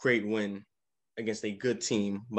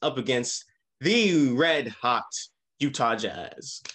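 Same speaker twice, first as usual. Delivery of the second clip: "red hot" leaned on hard, slow and loud. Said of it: "put emphasis on that red hot".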